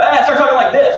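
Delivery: angry voice, very high-pitched and loud. Speaker explaining tone of voice to an audience, demonstrating a mad tone. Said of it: "Like he's either mad".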